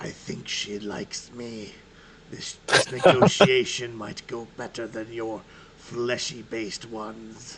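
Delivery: low stage whisper out the corner of the mouth. Voicing Otasesh during a negotiation with the group: Otasesh whispering aside. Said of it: "he kind of whispers at the side of his mouth".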